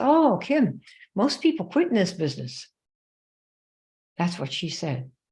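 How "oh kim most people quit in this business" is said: put-on slight Southern accent, higher pitch. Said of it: "with her little Southern accent".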